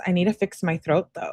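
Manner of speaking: normal talking voice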